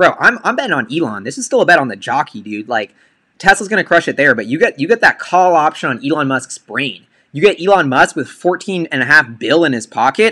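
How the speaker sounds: usual speaking voice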